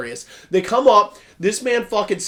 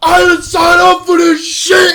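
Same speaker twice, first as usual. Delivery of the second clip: furious, angry yelling at full volume; 11 semitones higher, 11 dB louder than usual. Retelling a fan dub where the big guy refuses to take part: retelling a scream. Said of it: "He's screaming".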